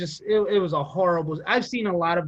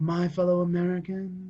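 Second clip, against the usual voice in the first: put-on flat, droning monotone delivery. Mocking how a man talks, imitating a flat droning monotone. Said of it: "He had this weird monotone speech".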